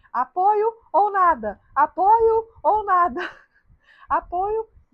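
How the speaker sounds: shrill, booming, very slow, drawn-out high scream. Retelling a friend's shout in a hard moment: imitating a friend's shout. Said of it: "o grito que ela deu foi muito bom".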